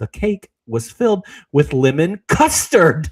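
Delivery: loud, angry, fuming. Quoting a line where Miss Piggy is mad about the cake: imitating Miss Piggy, mad. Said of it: "she's so mad".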